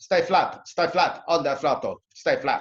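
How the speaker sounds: put-on Scandinavian accent. Imitating the Scandinavian guys who were teaching you to drive, in a put-on Scandinavian accent. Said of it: "they speak like this".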